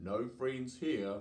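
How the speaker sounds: usual speaking voice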